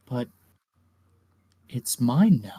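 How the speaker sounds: half-whispered under the breath, hushed stage whisper. Game master voices a character gripping a crystal, half-whispering. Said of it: "he just whispers like".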